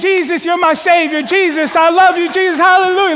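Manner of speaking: very high, loud cries at the top of the lungs. Retelling what someone suddenly started doing, retelling a shout to god. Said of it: "speaking to God at the top of his lungs".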